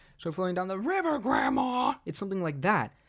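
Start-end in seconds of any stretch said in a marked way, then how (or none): 0.3-2.0 attempted scream, pitch swinging up and down. Showing the line that gets screamed: attempted Plankton scream. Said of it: "he screams that, though".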